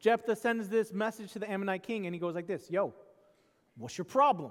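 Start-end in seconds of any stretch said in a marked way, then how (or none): 2.7-4.5 put-on New York-accented speech. Retelling a Bible story New Yorker style, one leader messaging a king, New York accent. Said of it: "probably the New Yorker version".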